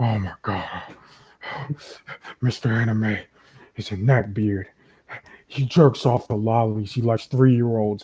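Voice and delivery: very deep, low, soft put-on mocking voice. Acting out how a man would talk about Mr. Anime, in a mocking deep voice. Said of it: "you have to make his voice deep too".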